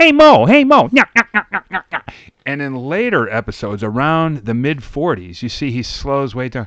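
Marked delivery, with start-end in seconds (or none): 0.0-2.1 very sharp, very high and very loud voice. Describing early episodes, imitating Curly: sharp high Curly voice. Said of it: "very sharp, very high voice".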